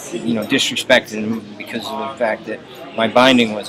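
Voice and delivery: ordinary delivery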